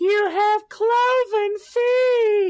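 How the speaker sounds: very high, slow, loud, screechy screaming impression.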